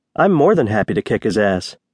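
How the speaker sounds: ordinary delivery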